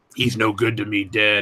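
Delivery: slow, drawn-out, very gravelly voice. Showing another speaker how the Boba Fett voice sounds: gravelly Boba Fett voice. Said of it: "He sounds like that. It's real gravelly".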